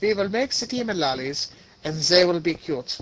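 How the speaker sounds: put-on German-accented scientist voice. Describing scientists making demon lollies, doing Einstein with a German accent. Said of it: "It was a German accent".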